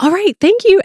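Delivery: very high, super peppy delivery. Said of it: "and super peppy".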